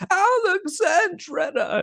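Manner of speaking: mock thrilled, very high-pitched excited cry. Recalling a movie reaction to a town name, imitating Sean Connery's excited shout. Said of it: "He gets so excited".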